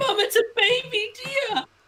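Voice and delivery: put-on high little girl voice. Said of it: "the daughter says".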